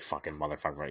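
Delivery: stern, low, grumbling, cursing tone. Retelling a stepdad's reaction to fetching the dog: imitating a grumbling dad. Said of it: "just doing the whole dad thing".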